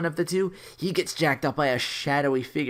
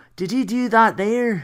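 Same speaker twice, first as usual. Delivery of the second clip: awful, very bad put-on Irish accent, pitched up; 7 semitones higher, 6 dB louder than usual. Retelling what a co-worker he saved said, very bad Irish accent. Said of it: "with a very bad Irish accent".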